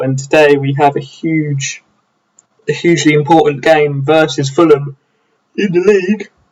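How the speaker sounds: yawning while talking. Updating viewers before a league game against Fulham, yawning while talking. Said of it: "Excuse me for yawning".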